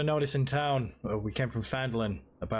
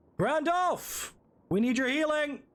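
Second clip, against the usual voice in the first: very high, drawn-out, loud shout. Carrying a fallen ally upstairs, calling to a healer: shouting back for help. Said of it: "I'm just gonna shout back".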